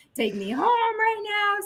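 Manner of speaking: tearful, very high-pitched, slow crying wail. Retelling her own words to him after the breakup, imitating own crying. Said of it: "I was crying".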